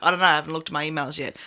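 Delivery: dead-level, unchanging delivery. Retelling repeating the same answer to a guy asking again: imitating own unchanging monotone. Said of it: "keep your tone exactly the same".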